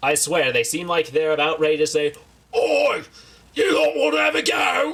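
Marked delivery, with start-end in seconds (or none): 2.5-4.9 very high-pitched tiny ork voice. Mocking how certain tiny people talk: Warhammer 40K ork voice. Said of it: "these people talk like Warhammer forty K orcs".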